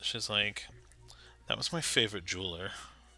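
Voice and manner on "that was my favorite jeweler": sigh-laden, very soft, very quiet mournful voice. Voicing a character walking the players away, sighing voice. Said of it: "with a sigh in her voice".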